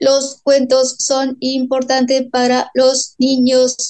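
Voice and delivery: flat, synthetic, robotic monotone speech. Quoting the robot Kylan that the speaker talks with: Kylan robot voice. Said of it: "con su voz robótica".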